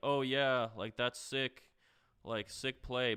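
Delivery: slow, mock, obviously sarcastic delivery. Retelling a friend's comment during a playoff game: imitating sarcastic praise. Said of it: "obviously sarcastic".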